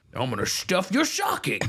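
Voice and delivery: very high, put-on, cartoonish villain voice. Doing a silly line that another speaker asks about: Grinch voice. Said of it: "Is that what the Grinch sounds like?".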